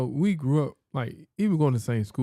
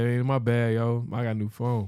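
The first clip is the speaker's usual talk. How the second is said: usual speaking voice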